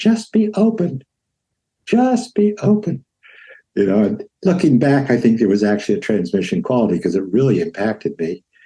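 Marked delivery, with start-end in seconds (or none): 0.0-3.0 very high, slow, drawn-out squeaky voice. Retelling a teacher's advice, imitating a high squeaky voice. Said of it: "he had the high squeaky voice".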